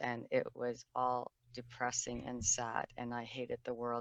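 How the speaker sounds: very quiet, dull, droning, flat monotone. Imitating how they spoke growing up, flat monotone voice. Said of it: "my voice was monotone growing up. I'm going to see if I can imitate it".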